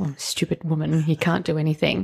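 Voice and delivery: muttering under breath. Retelling a kitchen moment, quoting the words said under breath, retelling muttering under breath. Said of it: "I kind of said it under my breath".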